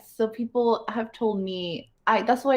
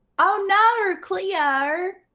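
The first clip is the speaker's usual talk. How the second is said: over-the-top Australian accent, very high pitched; 10 semitones higher than usual. Asked to say some words, showing off an exaggerated Australian accent. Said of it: "you're doing a perfect Australian accent".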